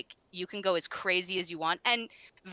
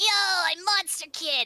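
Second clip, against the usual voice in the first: very high-pitched, gravelly, drawn-out slow voice; 11 semitones higher, 5 dB louder than usual. Talking about a voice they regret, the speaker shows their Monster Kid voice, gargling gravel. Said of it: "my Monster Kid voice at this point because it's just it's like gargling gravel".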